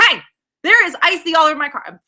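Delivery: put-on freaked-out, high, frantic yelling. Retelling yelling at the people behind the counter: imitating own yelling. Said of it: "I just started yelling at the people".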